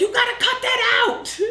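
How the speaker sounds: loud, projected yelling.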